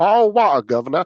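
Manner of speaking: teasing London accent. Friends talk about people making fun of british accents; one mocks a london accent. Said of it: "taking the Mickey out of a London accent".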